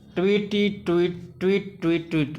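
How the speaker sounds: usual speaking voice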